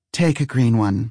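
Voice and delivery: ordinary delivery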